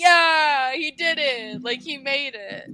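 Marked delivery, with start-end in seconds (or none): 0.0-1.6 loud screaming like a crowd of inmates. Recapping a scene where prisoners cheer a man on: imitating prisoners screaming. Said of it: "All the fucking uh Prisoners are all screaming like".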